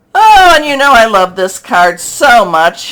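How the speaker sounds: loud, heavy, swooping sarcastic gush. Announcing the next card in a reading: sarcastic. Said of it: "she says sarcastically".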